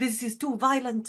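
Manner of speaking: put-on heavy Spanish accent, laid on thick. Retelling the speaker's nan watching Fallout at Christmas, imitating her thick Spanish accent. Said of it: "in her very thick Spanish accent".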